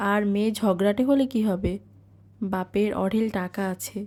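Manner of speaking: plain reading voice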